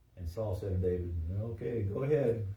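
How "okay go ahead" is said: sarcastic delivery. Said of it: "the sarcasm in, in, in his voice".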